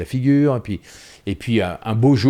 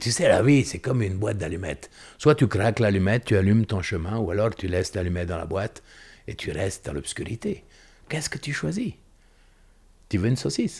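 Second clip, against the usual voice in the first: put-on Italian accent over French speech; 5 dB quieter than usual. Retelling a father's advice by the barbecue: imitating father's Italian accent. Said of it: "il avait un accent italien, mon père".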